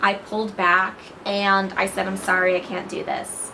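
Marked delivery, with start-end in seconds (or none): none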